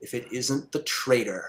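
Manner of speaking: deep, low, echoing helmet-like voice. Storyteller voicing Woundmaker as he confronts another character: Woundmaker's deep helmet-echo voice. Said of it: "his deep voice uh, echoes from within the helmet".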